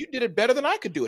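warm, high, fast, lively voice.

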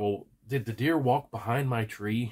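ordinary delivery

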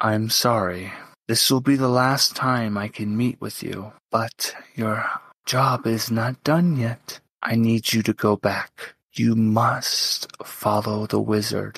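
gentle, soft voice of a dying god. A game master voices an unseen god catching a player's character, gentle voice of a dying god. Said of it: "And the god of order, [name], fades from the plane, suffering from the wounds that he suffered from Tharizdun. ... You just hear a gentle voice".

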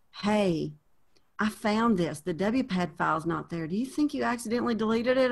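hushed, close to a half-whisper. Retelling a colleague quietly reporting a problem: imitating a colleague almost half-whispering. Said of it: "he almost whispered".

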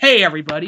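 put-on cocky superhero voice. Showing how the hero should greet everyone: cocky joking Spider-Man voice. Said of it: "all cocky or kinda, like, joke".

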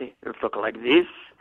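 speaking in a put-on French dialect. Showing an interviewer the dialects that can be done: french accent. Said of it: "I can do a French dialect".

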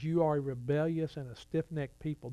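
plain

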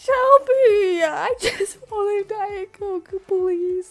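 crying, high, drawn-out tearful pleading. Retelling what a woman said to the speaker, Shelby: imitating someone crying. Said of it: "are you crying?".

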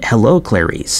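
ordinary delivery

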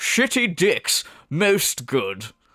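pompous, self-important, snooty pipe-smoking intellectual voice. Mocking pipe-smoking high-intellect viewers: imitating pipe-smoking highbrow viewers. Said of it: "All the high fucking Mensa people tune in to watch D S P, smoking their pipes, going".

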